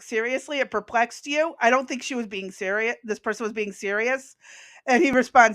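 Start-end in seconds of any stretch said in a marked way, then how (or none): none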